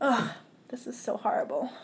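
tearful, weeping voice, crying through the words. Telling a painful story and asking for a tissue, crying while talking. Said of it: "Tissue, please".

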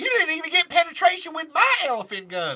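put-on Southern country drawl. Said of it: "I can do a [name] impression".

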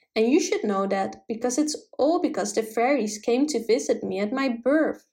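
ordinary delivery

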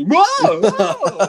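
loud fake voice climbing high in pitch. Joking about going through puberty on a ride: pretend voice rising in pitch. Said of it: "My voice is going up".

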